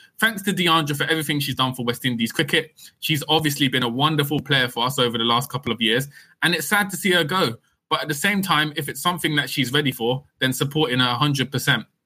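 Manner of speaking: ordinary talk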